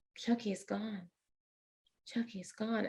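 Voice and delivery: imitated child whispering. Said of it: "Stop whispering".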